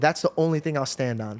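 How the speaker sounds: normal talking voice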